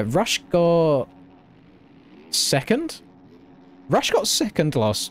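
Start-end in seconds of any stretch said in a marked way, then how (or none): 3.9-5.1 voice breaking on a hiccup, jumping high. Commentating a race result, hiccup voice crack. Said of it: "I hiccuped at the same time as talking".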